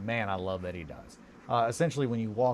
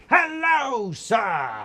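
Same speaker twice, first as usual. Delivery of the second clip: sudden, loud, shrill, very high swoop, "sir" drawn out; 12 semitones higher, 8 dB louder than usual. Imitating a man greeting you right behind you in the bathroom: loud greeting. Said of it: "That's that's how loud he says it".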